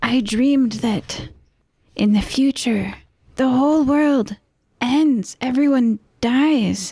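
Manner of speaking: whispered voice. Role-play character speaking to Errol, in a whisper voice. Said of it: "You ready for whisper voice?".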